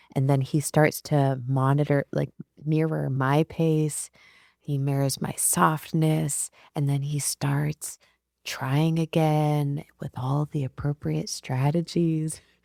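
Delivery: smooth, silky jazz radio DJ voice.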